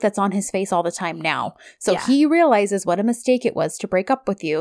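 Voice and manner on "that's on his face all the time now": usual speaking voice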